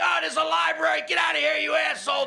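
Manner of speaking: very high, hoarse, rough screaming. Retelling how students in a packed library answered: imitating students screaming. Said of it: "But they just start screaming".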